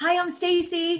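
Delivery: cheerful, bubbly tone. Showing how to sound positive without sounding like a Valley girl: bubbly upbeat greeting. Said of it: "Always be bubbly of like".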